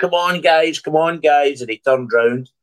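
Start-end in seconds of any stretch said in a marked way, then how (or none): 0.0-1.6 high, urging mock coach-style rallying shout. Retelling a player urging everybody to get the press on: imitating someone shouting. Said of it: "he was shouting to everybody".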